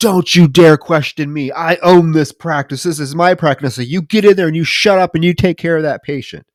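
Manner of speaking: furious, blowing-up, temper-lost outburst. Retelling a dentist scolding an assistant in the lobby: imitating a man losing his temper. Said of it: "He loses it".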